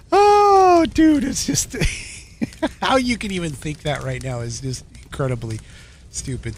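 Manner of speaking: words breaking up with laughter, swooping pitch. Reacting to a comment from a YouTube viewer, laughing while talking. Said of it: "I'm just laughing".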